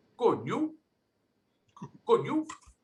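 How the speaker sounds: high-pitched voice with a Rhode Island accent. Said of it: "how we greet somebody in Rhode Island".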